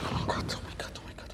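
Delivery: soft whisper, sounding panicked.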